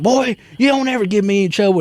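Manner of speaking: high, angry, mad scolding voice. Retelling how he jumped out and scolded his dog: imitating someone angry. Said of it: "and he's mad".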